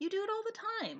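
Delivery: puzzled, bewildered. Clark answers her when she says talking is not hard, sounding baffled. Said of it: "sounding baffled".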